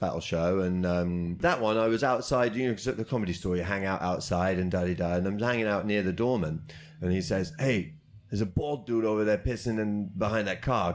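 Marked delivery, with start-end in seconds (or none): 7.6-10.9 put-on New York street accent. Retelling what the doorman outside the comedy store said: New York accent. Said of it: "I don't know why I'm doing New York accent".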